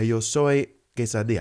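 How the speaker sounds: Spanish words with native-like Spanish pronunciation. Showing how to speak spanish abroad: native-like spanish pronunciation. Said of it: "learn it how they would say it".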